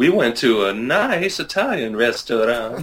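put-on Italian accent. Asked where they went after getting a sitter, the speaker answers in a put-on Italian accent. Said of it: "That's my almost to a T perfect Italian accent".

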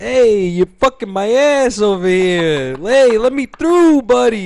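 put-on enraged Italian-American man's accent. Acting out an Italian guy having road rage: road-rage Italian guy accent. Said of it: "this is an Italian guy who's having road rage right now".

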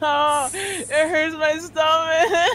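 helpless, painful laughter. Reacting to people's suggestions, the speaker is laughing so hard it hurts. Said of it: "I'm crying because it hurts so much, but it's so funny".

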